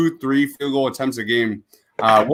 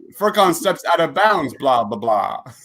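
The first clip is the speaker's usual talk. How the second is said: put-on vampire voice, higher pitch; 3 semitones higher than usual. Doing a mock basketball play call as a commentary bit, in the Dracula voice. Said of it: "you gotta do the Dracula voice".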